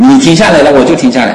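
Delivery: loud called reply.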